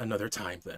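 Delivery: through clenched teeth. Game master voicing a glaring woman addressing the players, through gritted teeth. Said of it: "through gritted teeth just say".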